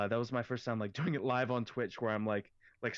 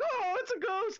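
squeaky, very high cartoony dog voice; 3 dB louder than usual. Retelling a cartoon made on stream: Scooby-Doo voice. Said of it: "Scooby's like".

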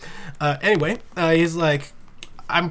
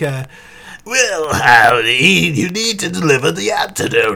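put-on very slow, loud, scratchy, growly old villain voice; 7 dB louder than usual. Imitating how he voices the Joker: scratchy, growly old Joker voice. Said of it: "the really, like scratchy, growly, I'm 70 years old and playing the Joker voice".

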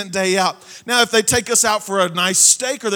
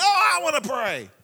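play-acted little kid scream, high and drawn out; 5 semitones higher than usual. Parent recalling family prayer time with the kids: imitating Hayes screaming. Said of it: "Hayes is over there screaming".

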